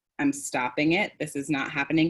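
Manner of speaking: normal talking voice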